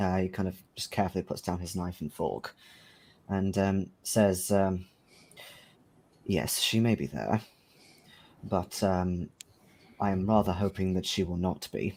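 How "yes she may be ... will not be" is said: low, hushed voice. Retelling a man's careful reply at the table, in a lowered voice. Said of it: "He kind of lowers his voice a lot more at that point and leans in".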